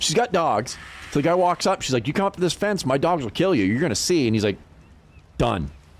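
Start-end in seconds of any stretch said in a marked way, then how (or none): 2.1-4.3 mock crazed, high, frantic freaking-out tone. Retelling how a woman threatened a cop at her fence, imitating someone freaking out. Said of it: "She starts freaking out".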